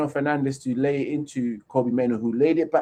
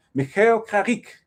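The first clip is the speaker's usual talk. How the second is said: put-on French accent, higher pitch; 8 semitones higher than usual. Saying a football manager's name as he likes to: french accent. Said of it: "with his name with a French accent".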